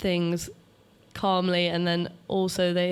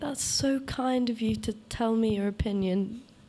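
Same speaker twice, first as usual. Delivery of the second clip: mock condescending, little-kid baby-talk style; 4 semitones higher than usual. Retelling a post about answering mansplaining, talking down as to a little kid. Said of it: "talk to them like a little kid".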